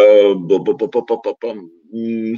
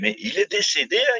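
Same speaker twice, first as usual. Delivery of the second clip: put-on raspy Italian mafia boss voice, higher, quieter; 8 semitones higher, 7 dB quieter than usual. Retelling a coach's reply, in a raspy Italian godfather voice. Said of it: "il a sa petite voix de parrain italien".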